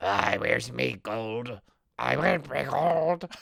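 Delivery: very slow, vibrating, creaky, metallic robotic voice. Imitating a movie leprechaun's dubbed voice: imitating a metallic voice-changer voice. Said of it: "his metallic voice that literally sounds like someone, like a kid talking through one of those dollar store".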